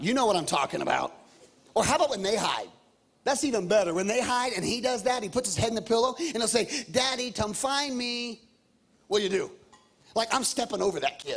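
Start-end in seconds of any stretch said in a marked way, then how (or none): 6.9-8.4 put-on little three-year-old child voice. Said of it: "little three-year-old voice".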